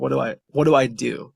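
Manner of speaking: put-on crying, frantic, panicked and stumbling. Retelling a conference call with a friend: imitating a crying friend. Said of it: "she's crying".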